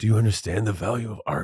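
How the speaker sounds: intense, dead-serious, pressing earnest tone. Retelling what a man said after making her sit down with him: imitating his intense tone. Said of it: "so intensely was like".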